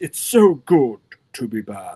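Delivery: deep, slow, dubbed-movie villain voice. Imitating a movie villain's line in a deep dubbed villain voice. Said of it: "being down here like this".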